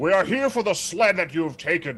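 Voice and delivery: grand magical voice. A player's character casts Thaumaturgy and announces why they have come, in a large booming voice. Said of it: "in a very large, booming voice say".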